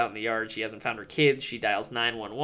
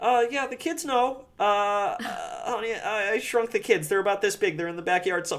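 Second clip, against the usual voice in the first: squeaky voice, stumbling and tripping over words; 9 semitones higher than usual. Retelling a movie scene where the father confesses to his wife: imitating Rick Moranis's delivery. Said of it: "it's such good delivery from Moranis".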